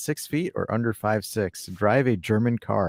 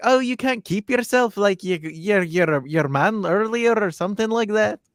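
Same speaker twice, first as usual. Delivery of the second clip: put-on full, strong Scouse accent; 10 semitones higher, 4 dB louder than usual. Retelling a pundit's on-air jibe: Jamie Carragher Scouse accent. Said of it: "that was your Scouse accent".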